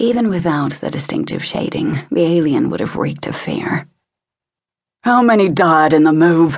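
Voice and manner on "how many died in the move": loud, insistent, demanding, pressing tone. Narrator reads Ian Lee questioning a frightened alien: demanding. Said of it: "Ian Lee demanded".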